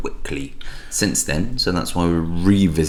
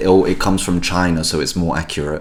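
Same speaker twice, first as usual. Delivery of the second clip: ordinary delivery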